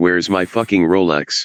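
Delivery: plain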